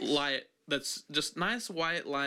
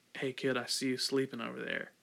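put-on creepy, spooky voice; 2 semitones lower, 3 dB quieter than usual. Acting out a prank nightlight talking to a sleeping kid: put-on creepy nightlight voice. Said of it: "like that".

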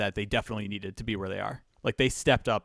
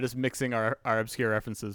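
ordinary talk, nothing marked

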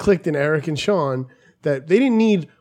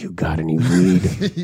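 very deep, very low, very slow, dragged-out voice; 10 semitones lower than usual. Retelling a friend asking a stranger for weed: imitating Eric's voice. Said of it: "His voice was like".

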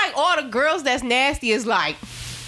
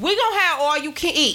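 ordinary delivery

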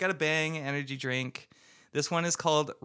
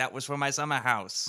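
put-on Cockney accent. Retelling what Michael Caine said about Jaws four: imitating Michael Caine. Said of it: "And he's like".

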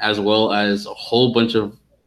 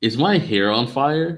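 mock-calm, even tone; 4 semitones higher than usual. Speaker re-enacts the other person's first reaction to their hair catching fire: mock-calm question. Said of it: "you asked calmly".

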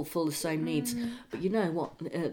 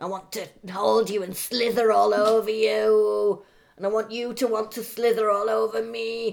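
creepy put-on voice, higher, louder, slower; 4 semitones higher, 5 dB louder than usual. Chatting about the other speaker's love life, doing a creepy Ivanka voice. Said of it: "It's really creepy".

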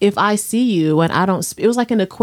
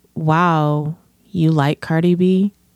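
put-on teenager's tone, much slower; 3 semitones lower than usual. Retelling what a niece said during a family visit, imitating a teenager's tone. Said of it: "Like that tone from mm-hmm. a teenager".

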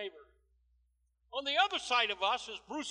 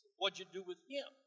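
normal talking voice

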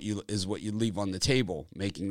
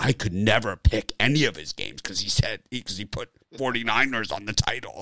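mock condescending tone, louder; 6 dB louder than usual. Imitating commenters who mocked a wrong video title: imitating condescending commenters. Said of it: "they're so condescending, like this".

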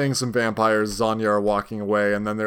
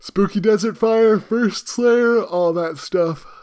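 very high voice, words stretched through a yawn; 10 semitones higher, 4 dB louder than usual. Recapping a scene, yawning through the entire sentence. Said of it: "Were you yawning for that sentence?".

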